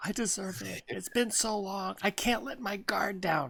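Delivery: earnest, sincere reality-show contestant voice. Imitating a reality dating show contestant: imitating Bachelor contestants. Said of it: "That's my impression of the, the Bachelorette".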